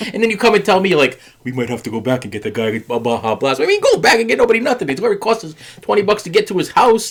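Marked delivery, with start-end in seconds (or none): 1.4-3.6 mocking, imitated way of talking. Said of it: "I don't talk like that".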